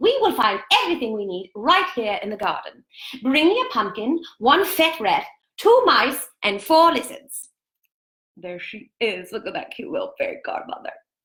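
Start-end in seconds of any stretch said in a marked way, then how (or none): 0.0-7.5 put-on regal British voice, higher. Reading a fairy tale aloud, voicing the fairy godmother: voice like the Queen. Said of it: "I've made her sound like the queen".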